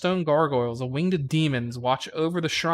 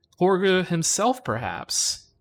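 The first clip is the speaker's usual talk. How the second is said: ordinary talk, nothing marked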